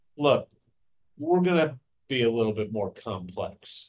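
low, scornful, disgusted, distasteful mutter. Quoting him at a press conference about last year's offense, imitating his disgust. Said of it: "like almost with disgust in his voice".

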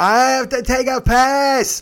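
mock very high, very slow, drawn-out holler. Retelling a passenger's outburst while pulling up: imitating someone yelling. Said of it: "He yells it".

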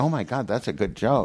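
normal talking voice

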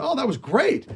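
high, upbeat, friendly, encouraging put-on voice. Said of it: "and he goes".

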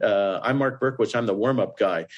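ordinary talk, nothing marked

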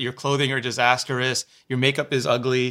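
plain

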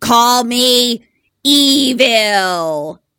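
ghostly put-on voice. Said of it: "That's what the voice sounds like".

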